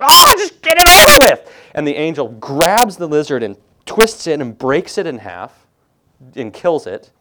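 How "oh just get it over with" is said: piercing, very high, very loud scream. Telling a story, the speaker acts out a man finally answering an angel: retelling a scream. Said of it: "he screams".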